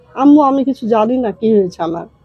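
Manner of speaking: usual speaking voice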